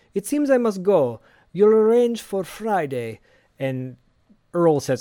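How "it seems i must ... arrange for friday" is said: put-on Russian accent, higher and louder. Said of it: "I was doing, like, a fucking Russian accent".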